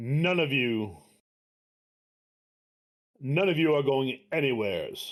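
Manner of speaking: drama-queen, theatrical stage delivery, villain-like. Voicing a cloaked figure who stands up and stops the group: dramatic talk. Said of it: "now you're trying to talk dramatic".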